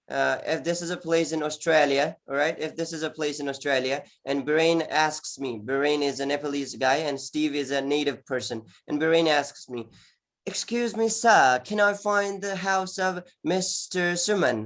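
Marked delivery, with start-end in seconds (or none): 10.4-14.6 put-on British accent, slow and high. Acting out a man asking you where to find mister suman's house, british accent. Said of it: "he's asking me like that in British accent".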